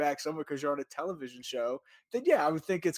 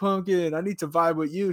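put-on drunk man's voice, louder; 5 dB louder than usual. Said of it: "he's definitely drunk, and he's like".

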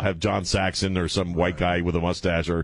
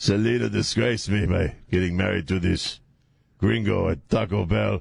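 badly done, rough, creaky father voice. Acting out the dad at a Taco Bell wedding: bad Edward James Olmos imitation. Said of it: "worst James Olmos imitation I've ever done".

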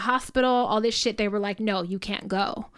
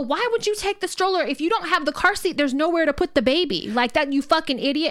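half-screamed, high-pitched scolding yell; 6 semitones higher than usual. Retelling yelling at people leaving a hotel room with a stroller, retelling a scream. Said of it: "And I'm like screaming in the hallway".

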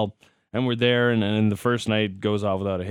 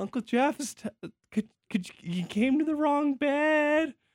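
mock-sweet put-on girlish voice, much higher; 5 dB quieter than usual. Retelling how Haley tried to wake her uncle Jeff, imitating Haley, all sweet. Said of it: "she's like being all sweet".

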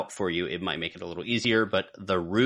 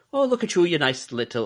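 put-on Irish lilt slipping in accidentally, pitched up; 8 semitones higher than usual. Asked to do the accent again, the speaker slips into an accidental Irish accent. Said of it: "now I turned Irish".

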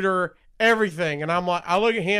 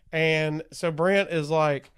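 ordinary talk

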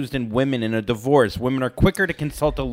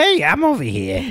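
pitched-up voice calling out; 8 semitones higher, 3 dB louder than usual. Asked by the others to do his nephews, imitating his nephews. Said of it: "do your nephews".

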